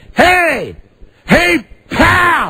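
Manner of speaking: swooping, very high yell, pal drawn out. Retelling calling out to a passing driver through the open window: retelling his own yell. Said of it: "I'm yelling and I said".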